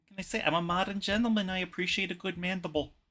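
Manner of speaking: put-on Bronx grandma accent. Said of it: "What accent is that?".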